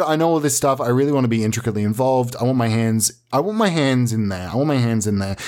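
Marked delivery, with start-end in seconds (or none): none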